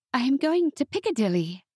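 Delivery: gentle tone. Narrating a novel, Mattie at last answers her sister Beatrice: soft voice. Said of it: "her voice soft".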